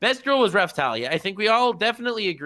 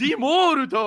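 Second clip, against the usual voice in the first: put-on Japanese-accented Italian, higher pitch; 9 semitones higher, 4 dB louder than usual. Retelling what they say to italian friends: italian in japanese accent. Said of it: "an R U instead".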